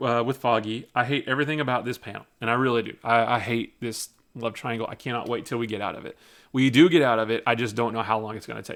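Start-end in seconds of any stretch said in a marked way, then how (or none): none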